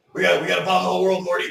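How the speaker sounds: put-on gruff old-man voice. A podcaster shows off his old man voices, doing a gruff Rick impression. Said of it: "getting that gruff voice".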